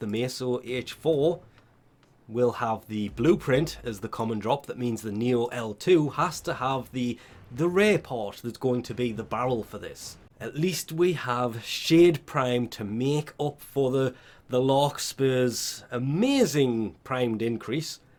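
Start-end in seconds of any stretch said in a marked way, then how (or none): none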